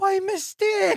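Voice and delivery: high, slow mocking voice. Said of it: "she says".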